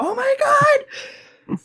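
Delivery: very high, loud excited squeal.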